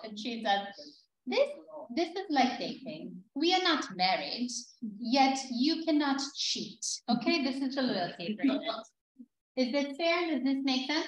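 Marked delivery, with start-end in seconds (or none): 1.3-11.1 heavy put-on German accent, higher pitch. Quoting a woman from the team, the speaker does her heavy German accent. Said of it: "she's got a very heavy German accent".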